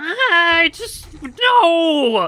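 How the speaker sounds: put-on very high, loud sobbing child voice with "no" stretched. Speaker retells how a young child reacted, imitating a crying child. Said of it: "he starts crying".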